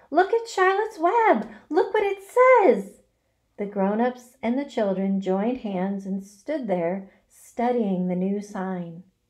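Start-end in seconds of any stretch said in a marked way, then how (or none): 0.1-2.9 high-pitched cry, called out. A character arriving at the pen spots the web and cries out. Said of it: "Cried Fern".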